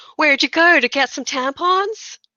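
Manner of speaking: calling out loudly, high. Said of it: "Called out from across the office".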